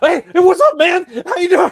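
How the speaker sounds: put-on very high, rushed, overexcited voice. Retelling own greeting on arrival: imitating own hyper greeting. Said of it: "I sounded spastic even to myself".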